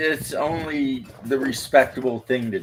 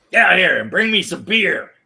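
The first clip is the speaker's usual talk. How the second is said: cartoonish, loud, high-pitched holler; 6 semitones higher, 6 dB louder than usual. Retelling a movie scene where a dad yells: Yosemite Sam voice. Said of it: "his dad sounds just like Yosemite Sam".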